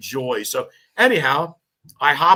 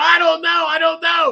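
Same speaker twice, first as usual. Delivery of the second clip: mock frightened yell, much higher pitch; 5 dB louder than usual. Recounting a basement fire, acting out the other man's reply, retelling a frightened yell. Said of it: "And he's yelling".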